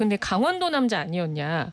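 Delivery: ordinary talk, nothing marked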